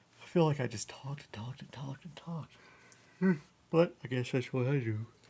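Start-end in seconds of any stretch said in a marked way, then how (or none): 3.7-5.0 talking mid-yawn, words stretched by yawning. Speaker, after talking for a long time, remarks on it, yawning while talking. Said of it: "I'm yawning".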